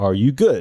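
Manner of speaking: normal talking voice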